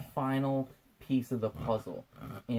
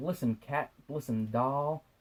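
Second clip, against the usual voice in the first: put-on, slow, drawn-out twenties accent; 3 semitones higher than usual. Speaker recaps a movie, voicing Steve Trevor talking to her; Steve Trevor in 1920s accent. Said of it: "I'm trying to do like a twenties accent".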